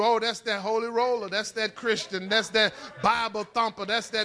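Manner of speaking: normal talking voice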